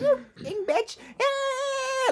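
very high, whiny mock shout. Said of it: "berating her and shouting at her like".

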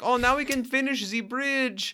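put-on French or German accent. Speaking to a co-host and listeners, imitating what he says: mock French or German accent. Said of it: "maybe I'm doing actually a very accurate impression".

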